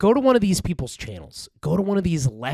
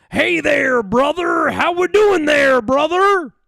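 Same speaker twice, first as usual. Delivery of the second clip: loud, very high-pitched voice; 11 semitones higher, 6 dB louder than usual. Showing what the hey brother voice from a channel sounds like. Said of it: "the "Hey brother" voice, it it kind of sounds like this".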